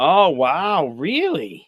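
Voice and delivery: swooping, taken-aback, surprised disbelief. Reacting to the other speaker naming a game pick: surprised. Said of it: "You sound surprised".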